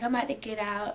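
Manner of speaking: plain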